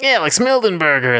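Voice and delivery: put-on high-pitched cartoony voice. Co-host greeting after the host's intro, in a Sonic voice. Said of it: "That's my sonic voice".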